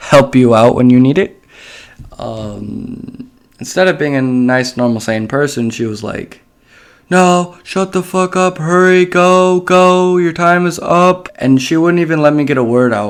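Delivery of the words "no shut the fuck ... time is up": put-on high, drawn-out sergeant yelling scream. Retelling how a sergeant screamed in their face: imitating a sergeant screaming. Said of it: "she was just screaming in my face and yelling".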